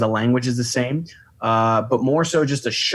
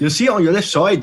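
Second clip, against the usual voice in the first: clumsy, bad, put-on Irish accent, pitched up; 7 semitones higher, 3 dB louder than usual. Showing what you hear at 2 in the morning, the speaker tries a bad Irish accent. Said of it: "I can't do an Irish accent for shit".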